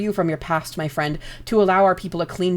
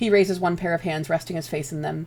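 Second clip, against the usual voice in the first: usual speaking voice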